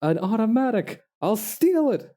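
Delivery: loudest voice possible. Quoting a cartoon villain's line in the loudest voice possible. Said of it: "the loudest voice possible".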